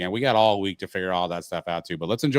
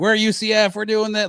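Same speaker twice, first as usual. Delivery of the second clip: put-on hyped yelling, higher and louder; 13 semitones higher, 4 dB louder than usual. Retelling a stadium hype video: imitating Marlon Williams yelling. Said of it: "yelling and screaming".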